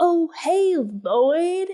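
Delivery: over-the-top, hammy voice, high-pitched and loud. You mock how he overacts when greeting Lloyd, in an over-the-top Jack Nicholson voice. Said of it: "like he's way over the top acting".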